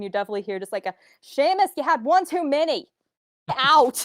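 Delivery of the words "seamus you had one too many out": slow, drawn-out yell, very loud and high. Voicing someone at the bar throwing out a patron; very loud shout. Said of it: "very loud".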